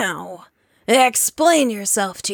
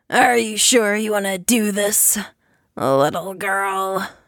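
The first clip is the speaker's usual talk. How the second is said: raspy put-on character voice. Narrating a story, Beetlejuice questions the girl who defied him: raspy Beetlejuice voice. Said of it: "he rasps".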